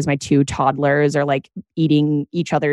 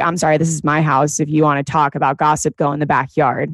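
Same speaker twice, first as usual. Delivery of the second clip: ordinary talk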